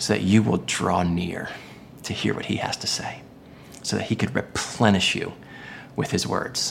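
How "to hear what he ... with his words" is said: low, soft whisper. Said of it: "He's whispering".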